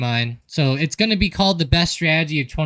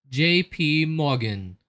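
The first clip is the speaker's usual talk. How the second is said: posh, fancy, put-on English accent; 4 dB quieter than usual. Telling listeners how he and Mike say J P Morgan on the phone: fancy English accent. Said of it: "try to say it with like a English accent".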